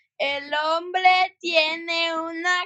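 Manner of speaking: slow, loud, app-like reading voice. Saying a Spanish sentence the way the language app reads it, Duolingo slow-mode voice. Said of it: "like in Duolingo when you put it in slow mode".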